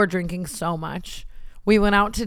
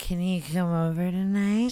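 put-on drunk voice, quieter; 4 dB quieter than usual. Describing a joke, acting out herself drunk calling a boy, imitating herself drunk on phone. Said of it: "sounds like me drunk on the phone calling a boy".

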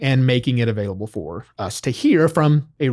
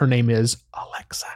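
hushed, quieter than usual; 4 dB quieter than usual. Speaker names the voice assistant sitting nearby, saying it quietly. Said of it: "I have to say it quietly".

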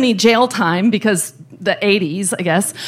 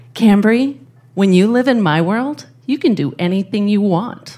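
put-on whisper. Retelling what a billionaire whispered into her ear: imitating a whisper. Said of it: "he leans over and whispers into my ear".

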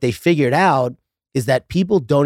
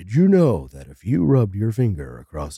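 low-pitched, lecturing voice; 4 semitones lower than usual. Mocking tidbit dudes who share facts: Neil deGrasse Tyson impression. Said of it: "That was a good impression".

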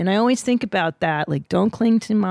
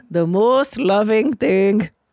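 put-on Indian accent, spiritual leader style; 2 semitones higher, 3 dB louder than usual. Quoting a spiritual leader he always thinks of, in a put-on Indian accent. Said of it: "I'll do his accent".

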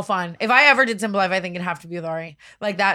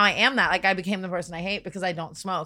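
normal talking voice

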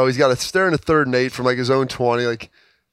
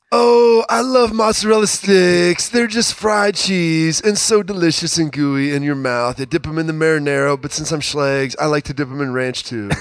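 rough, rasping put-on voice; 4 semitones higher than usual. Doing an impression of Schlegs during a mozzarella stick ad read: raspy-voiced impression of Schlegs. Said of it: "Really good impression".

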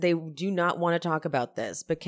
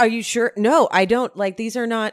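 mock panic, louder; 6 semitones higher, 8 dB louder than usual. Retelling a scene, the speaker acts out a man's flustered reply: imitating someone panicked. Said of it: "He's all panicked".

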